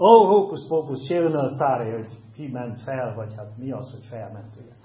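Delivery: loud, scornful, taunting, mocking sneer. Speaker retells a secret police officer's reply, retelling a mocking reply. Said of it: "gúnyosan válaszol a szekus tiszt".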